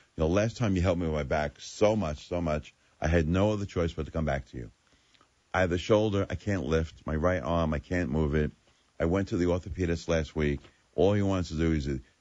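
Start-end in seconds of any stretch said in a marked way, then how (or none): none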